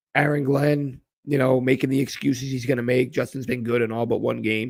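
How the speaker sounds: ordinary delivery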